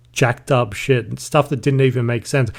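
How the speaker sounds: usual speaking voice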